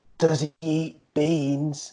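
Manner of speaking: mock whispering. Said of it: "nan was trying to whisper".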